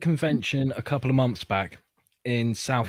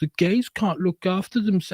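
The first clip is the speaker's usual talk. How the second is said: high, patronizing talk-down. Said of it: "They're being patronizing to them".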